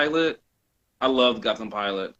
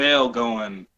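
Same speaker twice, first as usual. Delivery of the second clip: plain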